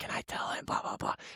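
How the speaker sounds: put-on hushed, very soft, excited child's whisper. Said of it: "I would hear her whisper things to him".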